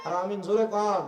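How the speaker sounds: normal talking voice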